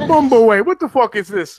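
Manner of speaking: mock-angry voice. Retelling how another person reacted, imitating someone really mad. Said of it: "really mad".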